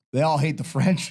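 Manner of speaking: ordinary delivery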